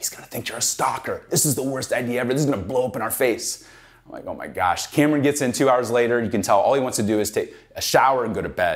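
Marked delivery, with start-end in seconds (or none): 0.0-3.7 hushed whisper, close in the ear. Retelling the business partner whispering in your ear, imitating someone whispering. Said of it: "He's whispering".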